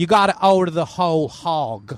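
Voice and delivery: Dallas accent, Texas drawl. Speaker doing accents as a bit, switching to a Dallas accent. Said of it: "I could do my Dallas".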